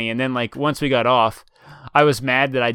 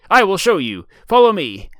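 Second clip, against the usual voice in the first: goofy, loud, swooping put-on pirate voice; 7 semitones higher, 5 dB louder than usual. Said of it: "talking in pirate voices".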